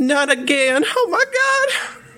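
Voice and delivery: frantic screaming. Voicing Disha as she runs away from the creature, screaming in panic. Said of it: "she's going to start screaming".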